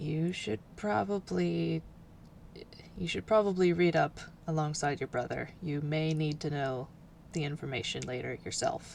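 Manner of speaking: soft, murmured, confiding undertone. Voicing the professor leaning toward Sasha: undertone. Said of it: "and in an undertone".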